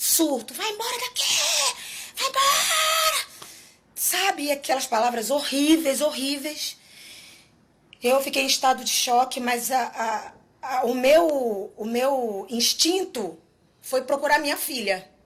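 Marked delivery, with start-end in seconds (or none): 0.0-3.3 mock bellowed furious yell, very high and climbing. Retelling how a man threw her out, imitating him yelling. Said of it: "aos berros, aos berros".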